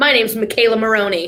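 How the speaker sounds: sassy put-on gymnast voice. Acting out a clue for a team to guess: sassy McKayla Maroney voice. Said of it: "but I'm a little sassy".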